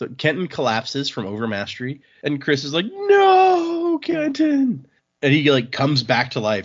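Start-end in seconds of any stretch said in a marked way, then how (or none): 2.9-4.9 put-on very high crying wail, "no" stretched. Retelling a scene where a character cries out over a collapsed friend: acting out a yell. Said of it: "will you please stop yelling?".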